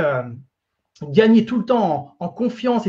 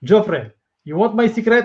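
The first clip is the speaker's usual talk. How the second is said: put-on Russian-accented English. Retelling asking a famous sportsman his secret, imitating Sergei's Russian accent. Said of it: "avec son accent russe".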